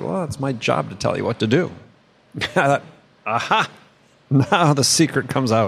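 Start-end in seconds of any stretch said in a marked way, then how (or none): 0.0-1.7 light, joking delivery. Speaker retells what a woman said on the phone, retelling a joking remark. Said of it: "she just sort of jokingly said".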